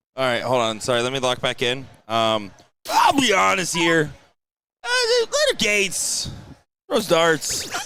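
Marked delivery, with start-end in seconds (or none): 2.9-7.7 terrible mock caricature voice, high and swooping. Calling a darts match, doing a terrible Will impression. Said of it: "Is that a Will impression?".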